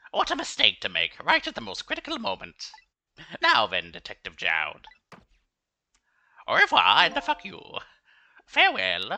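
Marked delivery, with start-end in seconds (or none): 3.4-9.1 put-on character voice, louder, slower. Voicing a character addressing Detective Jowd, in a Pilaf-style voice. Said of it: "I'm just glad I get to do this voice for this guy again".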